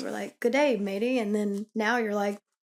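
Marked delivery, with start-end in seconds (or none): 0.4-1.2 imitated Australian accent. Retelling how the other person greeted after hearing an Australian friend: imitating an Australian greeting. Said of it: "you had listened to your Australian friend earlier".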